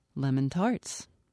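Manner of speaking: ordinary delivery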